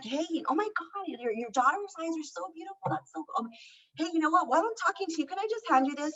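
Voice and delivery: sincere, easygoing tone. Giving advice on complimenting a stranger's daughter, demonstrating a genuine compliment. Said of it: "just be like".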